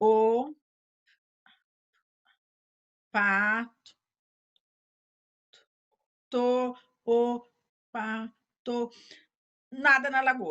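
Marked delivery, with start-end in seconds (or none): 0.0-8.9 very slow, halting, syllable-by-syllable sounded-out reading. Showing how someone who decodes very slowly reads, slow syllable-by-syllable reading. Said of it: "Cada uma dessas palavras nessa velocidade".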